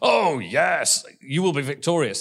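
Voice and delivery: put-on dripping false sincerity, slow and sarcastic. Retelling a false prophet's answer to a question, mock-sarcastic prophecy. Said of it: "And he uses sarcasm".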